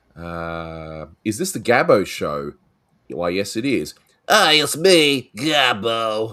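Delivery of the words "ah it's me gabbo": high, loud, slow, drawn-out character voice. Announcing the Gabbo show: Gabbo voice. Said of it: "it sounded a bit like Pee Wee Herman".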